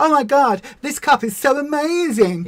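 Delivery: put-on high, gushing online video host voice. Advising a fellow creator not to copy YouTubers, in a mock-gushing YouTuber voice. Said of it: "do the thing where you're like".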